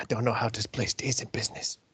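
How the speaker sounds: quiet under-the-breath mutter. As a character left to himself after the barman walks off, muttering under his breath. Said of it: "Rich is under his breath like".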